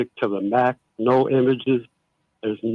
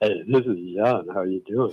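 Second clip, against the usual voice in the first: fake seductive deep voice, lower and quieter; 4 semitones lower, 4 dB quieter than usual. Greeting the radio host again as a caller, put-on sexy deep voice. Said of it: "he got sexy on us".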